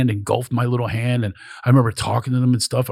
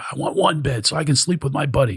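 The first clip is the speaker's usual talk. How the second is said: heated, insistent screaming in a complaining tone; 3 semitones higher than usual. Retelling a man screaming downstairs at the hotel guy, retelling a scream. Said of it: "He's screaming at the guy".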